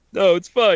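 mock ugly crying. Retelling watching the new Queer Eye season: imitating own ugly crying. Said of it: "some ugly crying".

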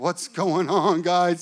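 acted trembling voice. Retelling pulling up at the house before hearing news, retelling a shaky voice. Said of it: "my voice is shaky".

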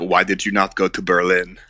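put-on English spoken with a German accent. Quoting Germans they met, in a German accent. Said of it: "But you do a very good German accent".

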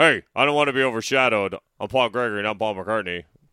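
booming, very loud, over-the-top put-on comic voice. Joking about a name change, imitating Pat's Paul Gregory impression. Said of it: "How does Pat do his voice?".

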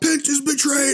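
mock very high screaming yell, pitched way up. Retelling a man who marched up the center, imitating a man screaming. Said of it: "marching up the center and screaming out".

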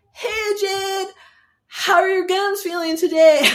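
very loud, very high Southern California bro voice. Imitating how a young man talks to her, in a bro Southern California voice. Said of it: "such a bro Southern California voice".

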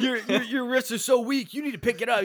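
irritated, pissed-off voice. Quoting a character who is angry at another: imitating a pissed-off Bakugo. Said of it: "Bakugo's all pissed at Tokiyomi".

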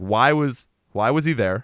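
ordinary talk

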